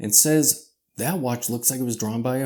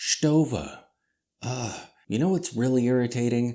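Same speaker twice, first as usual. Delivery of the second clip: ordinary delivery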